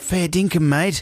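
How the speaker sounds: fake, overdone, bad Australian accent, pitched high. Saying goodbye to a guest playing cricket: bad Australian accent. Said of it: "A bad Australian accent".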